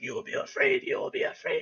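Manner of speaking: unhinged, crazed demonic whisper, repeated. Retelling the words of a bloody demon figure, in a crazy demon voice. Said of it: "this crazy-ass voice".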